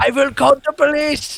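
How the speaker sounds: shrill, very high, loud put-on German accent. Narrating a game, voicing a distant figure taunting the players: German accent. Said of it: "You just went all German".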